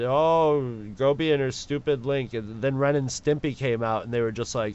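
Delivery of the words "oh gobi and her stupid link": ordinary talk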